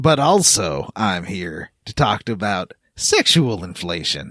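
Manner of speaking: very deep, low-slung character voice, pitched way down. Greeting the other speaker as a surprise visitor: Sam Elliott voice. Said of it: "It's me, Sam Elliott".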